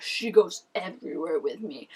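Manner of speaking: slow, macho, douchey alpha-male bro voice. Retelling a boyfriend's reply in an argument: douchey alpha male voice. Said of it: "really, like, douchey alpha male where he's like".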